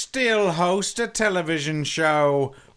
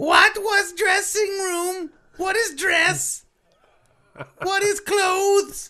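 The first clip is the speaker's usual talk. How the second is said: put-on very high-pitched, wild feral child voice; 12 semitones higher than usual. Playing a contestant on an improvised game show: feral child voice. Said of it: "is Feral Child".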